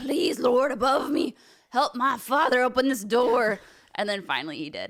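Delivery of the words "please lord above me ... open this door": put-on demonic voice, slow and drawn out. Recalling playing Mario with his father, speaker prays in a demonic voice. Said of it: "I had a demonic voice like that and everything".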